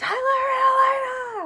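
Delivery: very loud, very high, far-carrying calling holler. Parent showing how they yell for the kids to come home, yelling to call kids home. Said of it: "the way we yell at the kids".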